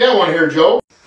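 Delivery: low, loud, booming fatherly voice.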